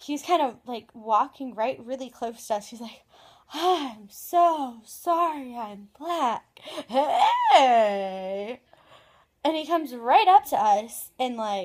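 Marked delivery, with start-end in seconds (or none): 3.5-8.6 imitated drunk man's voice. Retelling a stranger who jumped out at them: imitating a drunk man. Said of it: "you could tell he was really drunk".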